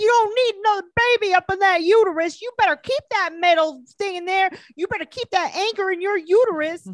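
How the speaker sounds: high, shrill, full-volume screaming rant. Retelling a screaming fight between a mother and daughter: imitating someone screaming. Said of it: "they're screaming about the I U D".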